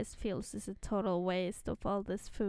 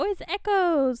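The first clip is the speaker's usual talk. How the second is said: put-on excited voice, higher and louder; 9 semitones higher, 10 dB louder than usual. Retelling a scene where Ember hears echoes: imitating excited Ember. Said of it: "And Ember is so excited".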